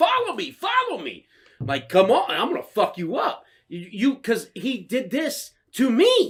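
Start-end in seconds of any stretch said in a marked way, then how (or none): 0.0-3.4 furious, angry, taunting yell with swooping pitch. Retelling a confrontation with a driver who cut them off, retelling yelling at him. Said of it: "I'm yelling at him".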